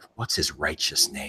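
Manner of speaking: totally straight-faced, deadpan delivery. Retelling a TV scene where a hero questions an arrested kid: imitating MacGyver being earnest. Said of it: "completely earnest, as though he talks like this every day".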